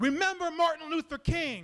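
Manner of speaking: high-pitched, screamed-out yell. Retelling a confrontation on a train, imitating a man screaming. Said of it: "And he screams".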